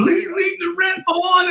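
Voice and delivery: very high, slow, blubbering fake crying and sobbing. Joking about calling someone while crying: mock crying plea. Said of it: "if I'm crying, I'm like".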